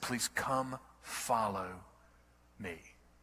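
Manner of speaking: gentle, loving yet firm tone. Retelling Jesus calling a hated traitor to follow: imitating a loving but firm voice. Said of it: "In a loving but firm voice".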